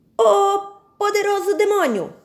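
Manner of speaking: high, loud, frightened shout. Shokpa cries out to the powerful demon, begging for her family, shouting. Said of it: "gritou Shokpa".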